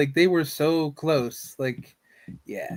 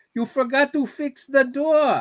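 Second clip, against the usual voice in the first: put-on cartoon old man voice, higher; 9 semitones higher than usual. Imagining a cartoon character showing up about the door: Uncle from Jackie Chan Adventures voice. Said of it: "You're gonna see Uncle from Jackie Chan Adventure show up".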